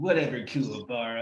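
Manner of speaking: mock cool dubbed voice. Retelling a reply from the English dub: cool Yusuke Urameshi voice. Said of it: "he's too cool".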